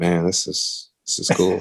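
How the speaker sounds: breathy, whispered inner voice. Retelling own thoughts while driving back: changed voice for inner thoughts. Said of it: "I don't know why I changed my voice like that".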